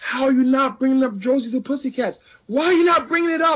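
put-on, very high-pitched screeching scream. Retelling listening to a podcast in the car: imitating himself screaming. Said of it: "they would see me screaming at nobody".

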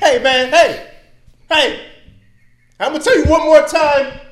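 very loud, very high yell with voice cracking. Demonstrating raising volume to show distress after being punched, voice cracking. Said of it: "Your voice is cracking".

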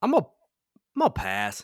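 genuinely upset, slow, swooping tone. Passing on a character while ranking characters in tiers, sounding upset. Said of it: "You said it like you were upset".

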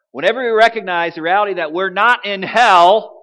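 booming, very loud, very high voice. Retelling dictating a statement into his phone, re-enacting saying it really loud. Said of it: "So I say it really loud".

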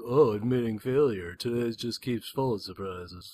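put-on cartoon character voice. Retelling a scene with Megatron to a listener, Bumblebee voice. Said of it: "That's my Bumblebee voice".

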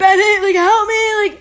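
very high, loud, frantic put-on panic. Retelling the moment the speaker thought they were choking, retelling a panicked plea. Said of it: "I'm choking".

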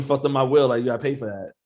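ordinary talk, nothing marked

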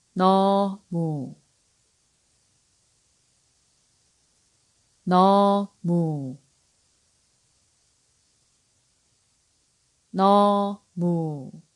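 unhurried pronunciation. Teaching a Korean word to learners, repeating it three times, saying it slowly. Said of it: "I'm going to say it slowly".

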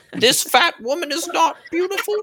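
mock angry lecturing voice. Imitating Jordan Peterson objecting to praise of big women: Jordan Peterson impression. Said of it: "Jordan Peterson comes on and says".

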